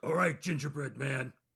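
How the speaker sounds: furious character voice. Playing a character in a game, threatening a gingerbread man: furious in-character threat. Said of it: "be furious about the".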